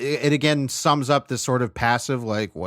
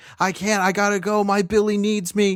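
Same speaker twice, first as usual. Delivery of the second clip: put-on frantic, panicked, high-pitched screaming; 8 semitones higher than usual. Retelling a film scene of a frantic drive, imitating Val screaming. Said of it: "just screaming at people like".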